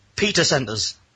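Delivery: plain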